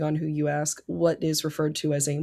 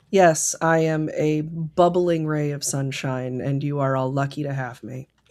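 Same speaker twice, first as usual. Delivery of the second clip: bone-dry, slow, flat deadpan delivery. Answering a remark about being the happy early person, deadpan. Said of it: "deliver that, like, deadpan".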